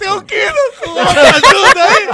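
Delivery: laugh-crying, high and loud sobbing laugh. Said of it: "você tá chorando, senhor?".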